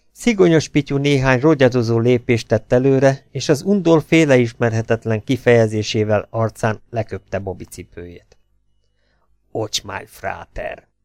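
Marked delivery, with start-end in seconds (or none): 9.5-10.8 growled grumble under the breath, very quiet. A narrator reads Szigonyos Pityu's line after spitting on Bobby's shoe, growled.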